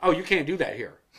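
put-on condescending tone. Retelling a man's reply to a request to reopen a claim, retelling a loud, condescending remark. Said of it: "he said it loud enough, like I'm an idiot".

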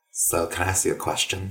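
put-on, very ditzy, airheaded Midwestern accent. Retelling a woman at a party asking a question, in a very ditzy Midwestern accent. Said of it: "in a very Midwestern kind of ditzy accent".

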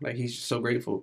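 plain

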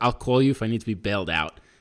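usual speaking voice

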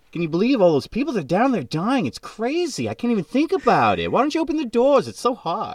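very high, swooping put-on New York accent.

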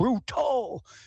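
mock very high-pitched, shrill, berating yelling. Retelling a teacher yelling at the official over a call: imitating Clive McDonald yelling. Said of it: "He's yelling at the official".

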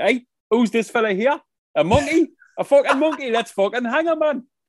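very high, actorly put-on Geordie accent. Retelling how men on the uk coast reacted to a monkey: actor geordie accent. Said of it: "in their actor Geordie accent".

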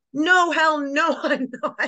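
mad, drawn-out, high voice. Retelling answering a man who asked about crying, retelling getting mad. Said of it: "I get mad at him".

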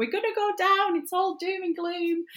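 very high, exaggerated, emotional shrill shriek. Speaker retells getting emotional during the season, imitating own shrieking. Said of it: "start shrieking and going".

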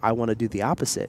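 normal talking voice

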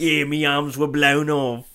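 Irish brogue, pirate-flavoured. A character with arms made of knives explains them, in an Irish brogue, pirate-like. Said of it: "An Irish brogue, and you sound like a pirate as well".

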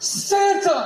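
very high, thrilled, excited squeal of joy. Retelling the mall scene from the movie Elf, Buddy the Elf's excited shout. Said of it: "And he's like".

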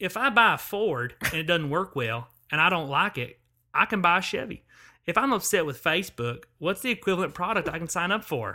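put-on voice, pointed, pressing delivery. Retelling a hearing exchange, quoting the questioner: Lindsey Graham voice. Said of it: "I'm gonna do his voice".

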